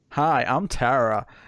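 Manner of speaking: put-on, fake American accent. Asked whether they can, the speaker introduces themselves in a put-on American accent. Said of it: "I'll do an American accent".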